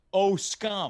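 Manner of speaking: normal talking voice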